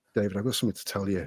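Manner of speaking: soft, really sheepish delivery. Retelling how the HR manager came up to him, imitating a sheepish tone. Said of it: "Like really sheepish".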